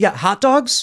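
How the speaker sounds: high, smarmy mocking echo.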